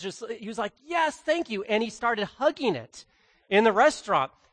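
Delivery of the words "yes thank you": high-pitched, excited, thrilled, blurted out. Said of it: "he was excited".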